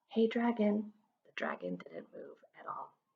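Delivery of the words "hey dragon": hushed, near-silent, very soft half-whisper. Reading a story, a character wakes a sleeping dragon by half-whispering very softly. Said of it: "Elizabeth whispered very softly".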